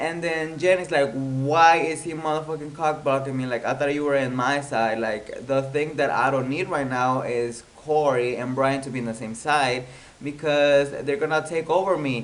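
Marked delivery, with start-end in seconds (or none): none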